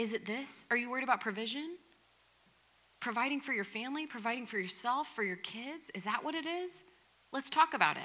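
acted patient, tender, gentle coaxing voice. Voicing Jesus gently coaxing a listener to share a burden: gentle coaxing Jesus voice. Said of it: "in his tone, in his gentleness".

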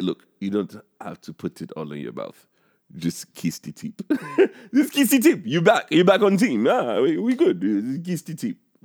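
put-on Russian accent. Riffing on a joke, in a Russian from Rocky IV voice. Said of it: "sounds like the Russian dude on Rocky Four".

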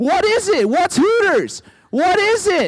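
very high yelling, loud and drawn out. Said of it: "I continued to yell".

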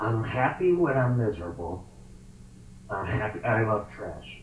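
low, cranky, grouchy puppet voice. Asked to say a given sentence like Oscar the Grouch, in Oscar the Grouch voice. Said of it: "say it like Oscar the Grouch".

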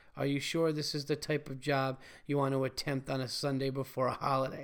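ordinary delivery

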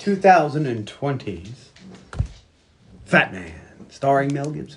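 swooping delivery with overly long dramatic pause. Announcing today's movie pick on the podcast with a dramatic pause. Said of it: "I had a dramatic pause there".

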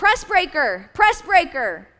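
frantic, high, loud swooping shouting. Retelling a coach's call during a game: imitating coach yelling. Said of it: "my coach is yelling".

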